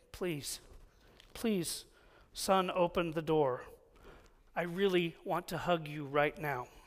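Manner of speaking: hushed, soft, quiet pleading tone. Retelling a father's words through a closed door, imitating someone speaking quietly. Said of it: "I heard my dad quietly say".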